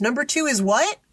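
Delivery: loud fake casual tone. Retelling what someone said out loud while a teacher watched, imitating a loud remark. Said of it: "Brian loudly goes".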